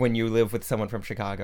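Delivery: normal talking voice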